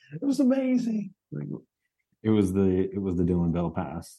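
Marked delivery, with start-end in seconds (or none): 0.1-1.1 put-on excited yelling and screaming, higher. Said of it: "yelling and screaming, like".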